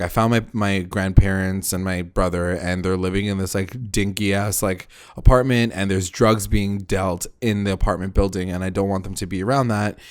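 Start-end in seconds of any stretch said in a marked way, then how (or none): none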